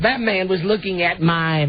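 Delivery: put-on thick, real, laid-on down-home Southern accent. Repeating a woman's words from the story, in a real Southern accent. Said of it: "Real Southern accent".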